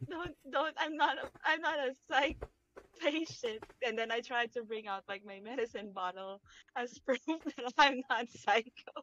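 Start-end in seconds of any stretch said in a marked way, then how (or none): 0.1-3.6 high, hushed, panicked pleading tone. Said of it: "I try to struggle and panic and be like".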